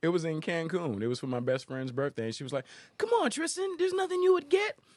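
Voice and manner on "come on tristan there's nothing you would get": very high, loud, shrill cartoon voice. Retelling what her best friend said at her birthday in Cancun, in a Spinelli from Recess voice. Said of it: "I make her sound like a cartoon".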